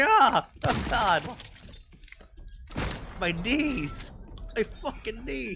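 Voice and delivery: very slow, high pained groan. Imitating a shot enemy complaining about his knees: imitating Eddie groaning in pain. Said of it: "it's just be like".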